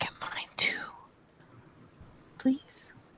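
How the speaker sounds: slow, drawn-out, breathy, hushed whisper. A player voices her sneaking character asking a companion: whispering. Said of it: "she's going to whisper".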